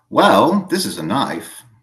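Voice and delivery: put-on loud, swooping, upper-crust Boston Brahmin accent. Quoting how the speaker's dad would say it, in a Boston Brahmin accent. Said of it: "quote a Boston Brahmin".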